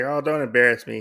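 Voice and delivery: ordinary talk, nothing marked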